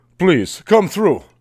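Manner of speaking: put-on, vaguely Russian accent. Acting out how a man now invites people through, in a deep, vaguely Russian voice. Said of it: "He became like Russian or something".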